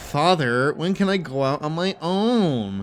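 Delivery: sassy, zesty voice with "own" drawn out. Retelling a movie trailer line in Pinocchio's saucy voice: imitating Pinocchio's saucy voice. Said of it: "in the sauciest voice of all time".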